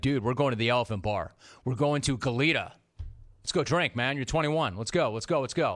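ordinary delivery

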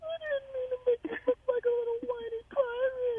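put-on very high-pitched, crying baby talk.

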